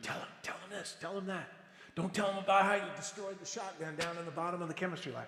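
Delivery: encouraging stage half-whisper. Retelling encouragement half-whispered during an interview: imitating a half-whisper. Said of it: "he's whispering encouragement to me".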